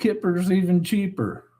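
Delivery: normal talking voice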